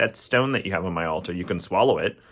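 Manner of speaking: ordinary talk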